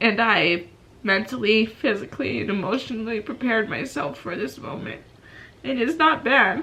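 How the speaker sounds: crying, tearful voice breaking through the words. Talking about a tough situation they prepared for, crying while speaking. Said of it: "I don't know why I'm crying".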